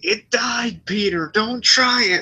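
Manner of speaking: high-pitched, slow, totally sincere delivery. Quoting a line to praise its sincerity: imitating Gonzo's sincere delivery. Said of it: "the sincerity of him saying".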